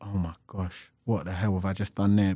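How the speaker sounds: dismayed, appalled exclamation. Retelling reacting to conceding goals: imitating own past dismay. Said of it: "being like".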